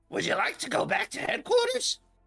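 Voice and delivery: very high, erratic, haphazard, tiny computer voice. Describing the car's AI as someone gets in, haphazard little AI voice. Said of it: "a haphazard little little A I voice kind of comes on and goes".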